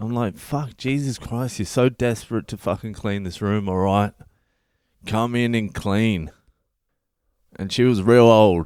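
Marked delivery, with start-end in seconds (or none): none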